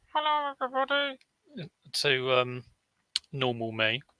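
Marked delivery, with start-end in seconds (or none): 0.1-1.1 very high, tiny, boxed-in little-man voice. Showing how your sound used to come across, greet everybody in a little man in a box voice. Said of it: "little man in a box voice".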